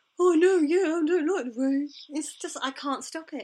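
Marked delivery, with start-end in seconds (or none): 0.2-1.9 very dumb, dim-witted dopey voice. Speaking for him when she says it looks rainy, in a very dumb voice. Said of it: "I speak for him in this very dumb voice".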